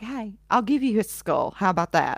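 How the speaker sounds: ordinary talk, nothing marked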